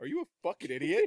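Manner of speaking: low, bone-dry, play-acted driest possible delivery. Speaker retells Kessler's blunt remark to them, imitating his dry tone. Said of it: "Just at the most dry tone".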